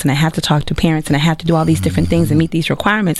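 super fast, rushed, rattling delivery.

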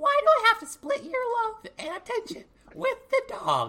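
high, loud, swooping squeak. Asking a question meant to be in Chad's voice, in a Mickey Mouse voice. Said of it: "not Mickey Mouse".

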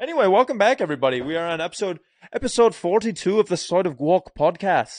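put-on Irish brogue accent. Welcome everybody back to the podcast episode, doing a Conor McGregor impression. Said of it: "Do I sound like Conor McGregor?".

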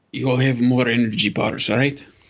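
hushed, very low volume. A character turns around to the group and asks, very quietly. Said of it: "will say very quietly".

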